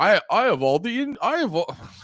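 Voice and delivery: poor put-on Indian accent. Retelling a movie about a random indian guy, the speaker does a shitty indian accent. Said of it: "I was trying to do a shitty Indian accent".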